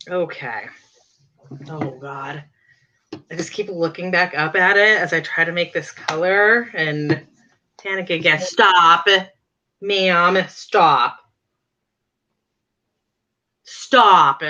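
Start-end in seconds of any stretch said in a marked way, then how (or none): 8.4-14.4 very slow, stretched-out, scolding yell. Speaker breaks off mid-task to stop their cat, yelling at the cat. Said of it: "I'm yelling at my cat".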